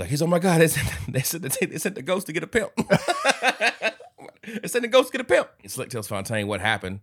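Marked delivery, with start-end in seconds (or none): 0.2-5.5 high, laughing, panicked freak-out squeal. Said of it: "Slick is freaking out".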